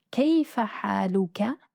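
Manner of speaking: plain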